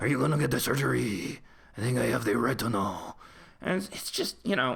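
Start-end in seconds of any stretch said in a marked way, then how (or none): 0.0-3.2 stewing, suppressed anger. Recounting a scene where he stews over the surgery, mock suppressed anger, Stellan Skarsgård-like. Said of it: "He's like obviously stewing with anger and suppressing it. So he's saying it like almost like Stellan Skarsgård".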